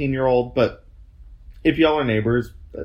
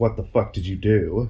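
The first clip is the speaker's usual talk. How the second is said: normal talking voice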